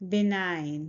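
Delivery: low, careful benign with stress on nine.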